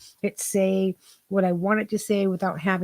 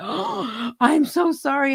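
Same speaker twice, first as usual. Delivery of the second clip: imitated shocked, startled child voice, higher; 7 semitones higher than usual. Retelling how a child apologized after swearing: imitating a shocked child apologizing. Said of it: "his eyes as big as saucers".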